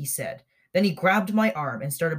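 plain reading voice

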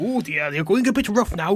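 amateur put-on Welsh accent. Joking with a friend about who's top and bottom, voicing one in an attempted Welsh accent. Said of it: "the best I can do with a Welsh accent".

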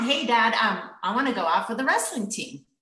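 ordinary delivery

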